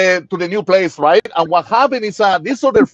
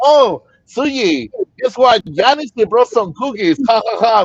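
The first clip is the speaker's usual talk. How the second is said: put-on playful joking tone, broken by giggles; 2 semitones higher than usual. Retelling putting cookies on the table for a wife: retelling own giggly line. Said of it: "And giggling, I say".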